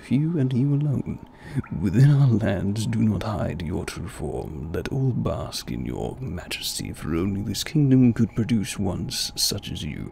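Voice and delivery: exaggerated put-on British accent, deep voice. The speaker decides to voice these lines, in an over-the-top British voice. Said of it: "gonna do that over the top british voice".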